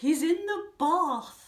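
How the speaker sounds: plummy, very posh, high, drawn-out voice. Recalling a line from a show performance: Zara Chapman's very posh voice. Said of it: "saying in a very, very posh voice".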